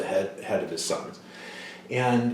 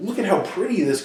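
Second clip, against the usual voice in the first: put-on high, eager little-boy voice. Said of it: "and he goes".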